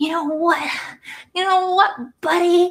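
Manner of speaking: very high, mock-furious, angry scolding. Acting out an argument with her husband: mock angry arguing. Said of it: "I'm so mad right now".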